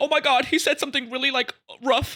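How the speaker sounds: very high mocking whine.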